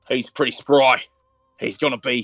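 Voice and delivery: put-on very slow, drawling Australian accent. Voicing a character checking a player's injuries: slipping into Australian accent. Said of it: "I went Australian for a second".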